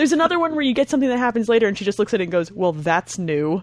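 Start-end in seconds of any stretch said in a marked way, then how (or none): 2.5-3.6 mock ice-cold dry sarcasm, much slower. Describing a character reacting to something later on, mimicking an ice-cold sarcastic line. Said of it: "so ice fucking cold and so sarcastic".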